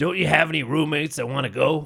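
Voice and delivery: put-on eerie, possessed-sounding, creepy old granny voice. Retelling how her grandma asked about going with roommates, imitating her grandma's voice. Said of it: "That's her grandma's voice".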